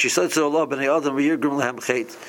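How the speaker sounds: ordinary delivery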